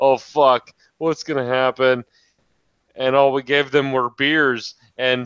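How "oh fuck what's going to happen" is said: put-on sheepish voice. Retelling how two friends walked over when called: imitating a sheepish tone. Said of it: "like, sheepish little puppies".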